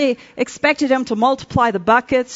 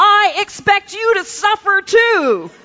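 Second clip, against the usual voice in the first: angry, high, drawn-out screamed outburst; 9 semitones higher, 3 dB louder than usual. The speaker retells screaming at their husband, retelling a scream. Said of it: "I tore the paper from his hands and screamed at him".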